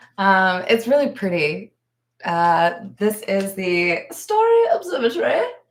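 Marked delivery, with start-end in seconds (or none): 4.1-5.4 stupid, squeaky, very high put-on voice. Showing a favorite card, saying its name in a stupid voice. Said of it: "I have to say it in a stupid voice".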